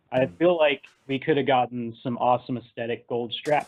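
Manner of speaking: ordinary talk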